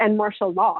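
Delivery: ordinary delivery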